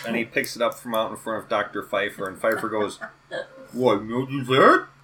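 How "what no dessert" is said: put-on, raised, high talk through mouthful of food. Retelling a scene where Pfeiffer's dish is taken away, mock mouth-full voice. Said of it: "around a full mouth of rice".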